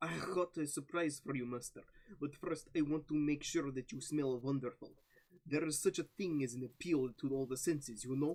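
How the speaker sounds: put-on Russian accent. Reading a romance scene aloud to others: Russian accent. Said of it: "What's with the Russian accent?".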